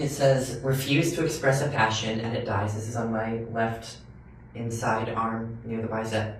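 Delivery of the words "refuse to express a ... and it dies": plain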